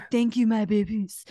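sexy, half-lost voice, barely there. Answering a co-host whose voice is half gone, Phoebe impression from Friends. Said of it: "Like Phoebe in that episode of Friends".

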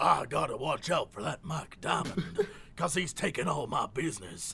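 put-on soft Texas accent. Describing plumbing ad characters, the speaker voices Bubba's line: Bubba's Texas accent. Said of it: "Why is one of them like from Texas".

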